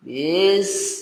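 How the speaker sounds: far too slow, stretched out. Showing slow, medium and fast paces, the too-slow one: too slow, drawn out. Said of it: "nah itu agak terlalu lambat".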